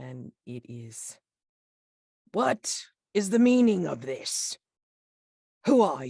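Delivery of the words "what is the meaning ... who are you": very loud, booming, resounding, high-pitched voice. Narrating a scene, the speaker voices a figure behind the listeners: booming voice. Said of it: "you hear a booming voice behind you".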